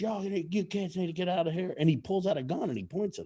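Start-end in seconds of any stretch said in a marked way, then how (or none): 0.0-1.7 man's high-pitched, hollering yell. Retelling a man behind a fence telling kids to leave: imitating a man yelling. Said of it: "he's yelling at us".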